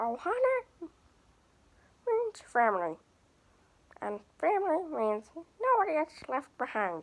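high cartoon voice with wide, swinging pitch swoops. Running through a list of impressions, the speaker does number two: Stitch voice.

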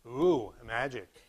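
put-on sarcastic ooh. Imitating students' reaction to a magic trick in class, mock-sarcastic ooh. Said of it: "I heard a little bit of sarcastic".

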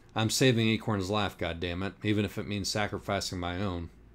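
ordinary delivery, nothing marked

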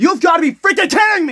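loud, high, swooping angry yell. Speaker reacting to the Leafs losing to the Capitals again; yelling. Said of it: "I didn't need to yell".

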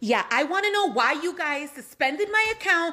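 loud, angry yelling. A caller to customer service asks why their account was suspended, yelling angrily. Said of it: "is there a reason you're yelling at me".

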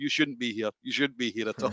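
mock laughing delivery. Retelling a man laughing at him for showing up, imitating someone laughing. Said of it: "he was just laughing like".

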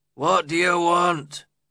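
gruff growling voice. Narrator reads Joseph's reply from a window to the visitor at the door, growled. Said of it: "he growled".

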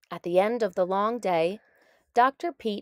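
ordinary delivery

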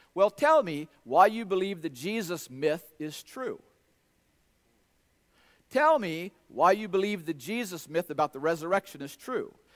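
normal talking voice

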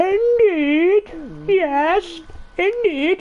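put-on very high old English lady voice. Speaker saying a favourite word as an old english woman would, old english woman voice. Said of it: "Especially when an old English woman says it".

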